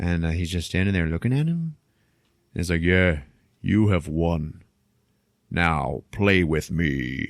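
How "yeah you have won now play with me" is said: huge strange monster voice, deep and very slow. Retelling a scene where the thing talks to the man, in a big weird voice. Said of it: "starts talking to him in like a big weird voice".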